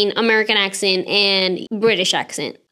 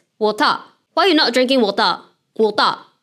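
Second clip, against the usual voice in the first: Singaporean English accent. Comparing accents, the speaker demonstrates Singlish with a Singaporean English accent. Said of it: "If I would do Singlish".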